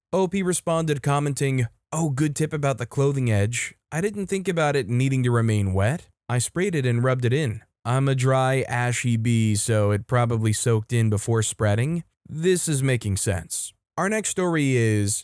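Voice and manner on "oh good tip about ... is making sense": usual speaking voice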